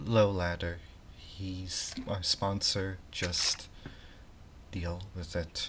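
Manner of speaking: slow, hushed half-whisper. Narrating a scene where the captain half-whispers back to the player, half-whispering. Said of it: "the captain whispers back to you".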